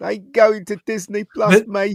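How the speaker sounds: very high-pitched, drawn-out whine. Answering a viewer request for a whiny impression: whiny John Boyega voice. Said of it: "do an impression of John Boyega".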